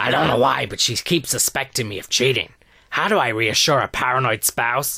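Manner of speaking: acted loud, hoarse, film-psycho voice. Reading out a listener letter signed by Harvey Weinstein: Hannibal Lecter voice with sore throat. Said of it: "and Hannibal Lecter with a sore throat".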